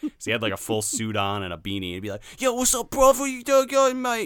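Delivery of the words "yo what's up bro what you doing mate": put-on Cockney accent, very loud and high. Imitating a man who sounded like a townie: Cockney townie accent.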